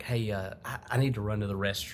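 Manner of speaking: soft, calm, low-key, quiet voice. Recalling going up to someone during a practice, retelling own quiet, calm request. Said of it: "trying to be like really calm about it and quiet".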